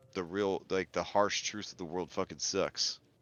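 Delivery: ordinary talk, nothing marked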